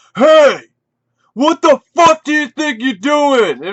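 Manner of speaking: loud, high-pitched, put-on angry, pissed-off shouting. Retelling a store owner catching the speaker moving tapes around: imitating an angry store owner. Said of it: "he like gets pissed".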